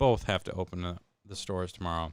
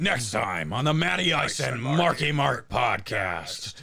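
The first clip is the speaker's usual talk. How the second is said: anime announcer voice, slow with big pitch swoops; 4 semitones higher than usual. Copying the announcer for their podcast: Dragon Ball Z outro narrator. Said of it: "This is like a Dragon Ball outro".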